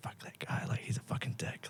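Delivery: catty, breathy whisper, barely audible, very hushed. Describing people in a toxic hospitality job bad-mouthing someone nearby; retelling a whisper. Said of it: "someone's like whispering".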